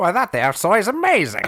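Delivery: put-on old-timey 1930s voice. Asked to voice a 1930s crowd watching an axe bounce off: 1930s voice. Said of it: "somebody on this podcast who does a nineteen thirties voice".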